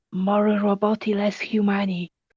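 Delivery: whispering, hushed voice. Voicing a character who whispers to another character: whispering. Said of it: "Dumar is gonna whisper to you".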